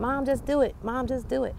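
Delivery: put-on high, urging young girl's voice.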